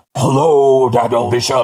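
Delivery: low, wheezy, put-on asthmatic villain voice. Opening the podcast, a host greets his co-host in a put-on asthmatic-sounding voice. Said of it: "something wrong with your voice?".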